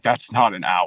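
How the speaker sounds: normal talking voice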